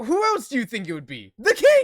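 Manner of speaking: full-on, very loud, swooping scream. Voicing a captive heard in a player's mind: screaming. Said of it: "It's kind of a scream".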